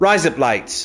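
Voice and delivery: Australian-accented delivery. Joking that rise up lights sounds like razor blades in an Aussie accent. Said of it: "in an Aussie accent".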